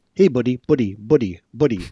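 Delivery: put-on Afrikaans-accented speech.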